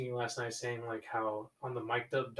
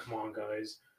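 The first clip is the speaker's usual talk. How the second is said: put-on robotic voice, quieter; 2 semitones lower, 4 dB quieter than usual. Imagining how a quiet player would try to motivate the team, in a robotic Kawhi Leonard voice. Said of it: "I can just imagine Kawhi with like his robotic voice".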